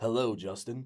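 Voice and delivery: imitated deep voice. Retelling a voice heard from the kitchen: imitating a deep voice. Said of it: "a deep voice go".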